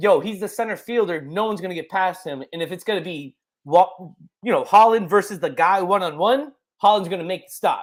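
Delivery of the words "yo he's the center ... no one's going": usual speaking voice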